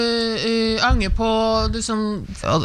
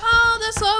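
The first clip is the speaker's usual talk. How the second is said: mock voice, pitched very high. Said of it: "Og folk bare".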